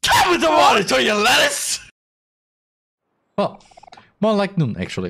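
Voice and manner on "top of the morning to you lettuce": yelling loudly. Reading a game greeting aloud again after being told to scream louder: shouting the greeting. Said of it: "Du hast nicht laut genug geschrien".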